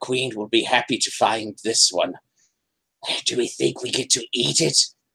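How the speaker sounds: high, chattering, chittery little spider creature voice. Narrating spiders carrying the listener deep under the mountain: chittery spider voices. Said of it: "their little chittery spider voices".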